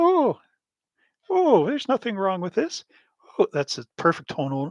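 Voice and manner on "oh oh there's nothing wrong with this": very high-pitched, fatherly, dismissive voice. Retelling what dad said about the airbrush: imitating dad's voice.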